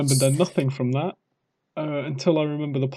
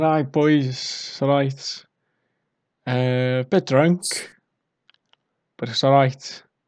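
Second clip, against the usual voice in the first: put-on heavy Welsh Valleys accent, spoken very slowly; 3 dB louder than usual. Retelling a drunk phone call, in a thick Welsh Valleys accent. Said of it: "with a thick Valleys accent".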